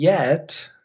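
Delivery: "yet" hit hard, otherwise held back. Talking about a person on day one of a business: emphasis on 'yet'. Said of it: "emphasis on yet".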